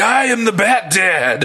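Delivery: very slow, high-pitched delivery. Describing a character and quoting his catchphrase: imitating Bat Dad. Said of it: "He's like".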